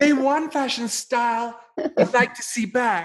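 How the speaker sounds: high-pitched, pampered voice. Asked to do the questioning as Richie Rich, the speaker tries it: Richie Rich voice. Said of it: "could you please do this questioning in the voice of Richie Rich?".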